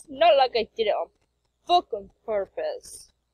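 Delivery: loud put-on Irish accent. Reading a comic aloud, a character answers the complaint about tangled cords: Irish accent. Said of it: "I kind of got that Irish accent down".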